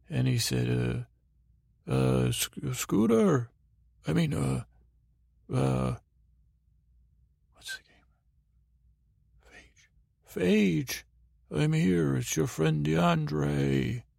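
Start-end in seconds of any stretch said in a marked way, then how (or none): 1.9-14.0 sundering giant's voice. Retelling a story where a giant's voice suddenly came: DeAndre's sundering giant voice. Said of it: "a sundering giant's voice".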